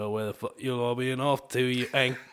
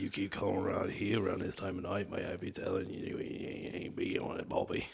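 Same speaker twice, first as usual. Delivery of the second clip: hushed, breathy, menacing British tough-guy accent; 4 semitones lower, 7 dB quieter than usual. Taking a turn at the voice challenge as the intimidating british guy. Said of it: "the intimidating British guy".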